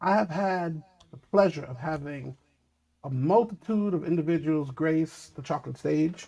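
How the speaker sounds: slow, deliberate, drawn-out delivery. Saying it slow for the people in the back, speaking slowly. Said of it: "I want to say this slow".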